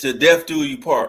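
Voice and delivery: plain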